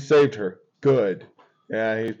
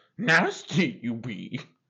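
put-on creature voice, quieter; 4 dB quieter than usual. Trying another line after a failed attempt, bad Yoda impression. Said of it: "That was worse".

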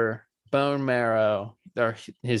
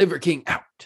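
tossed off casually with the voice pitched up; 5 semitones higher than usual. Listing what an excitable, enthusiastic man says: imitating Liver King. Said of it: "and he's like".

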